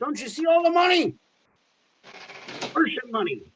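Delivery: squeaky, very high, ranting crank voice. Mocking someone called the quack who blames average people: mocking imitation of the quack ranting. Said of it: "He's like".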